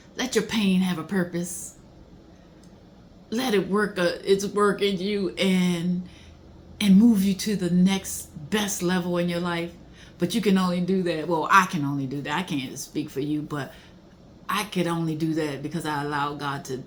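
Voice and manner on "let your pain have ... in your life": emotional, tearful, close to breaking down. Speaker continues after admitting being about to cry, on the verge of tears. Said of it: "I'm about to cry".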